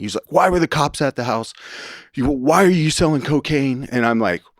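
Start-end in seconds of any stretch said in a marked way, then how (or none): 0.3-3.9 put-on screaming, pitched up, sharp and accusing. Retelling a phone call where the dad was screaming: imitating dad screaming. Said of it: "screaming at me".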